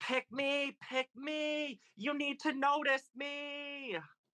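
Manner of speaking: very high screaming with 'me' stretched long. Retelling trying to get noticed at a concert: imitating own screaming. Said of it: "I was just screaming".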